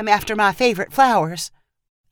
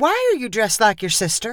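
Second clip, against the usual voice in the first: demanding, insistent, pressing tone. A mother confronts her daughter, who is dressed like her sister, demanding. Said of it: "her mom demanded".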